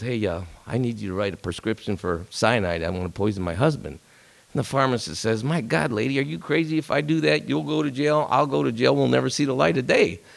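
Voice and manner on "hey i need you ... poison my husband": low, hushed, confiding undertone, voice dropped. Telling a joke, the speaker voices a lady at the pharmacist, dropping her voice. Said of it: "she kind of drops her voice".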